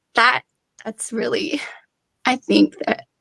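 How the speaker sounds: moved, emotion welling up mid-sentence. Sharing a personal story with two others: getting emotional. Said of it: "I'm getting emotional".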